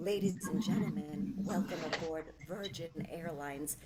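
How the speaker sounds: put-on, seductive, low, sultry announcer voice. Retelling their flight announcement, in a put-on sexy announcer voice. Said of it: "I did all my flight announcements in that sexy voice".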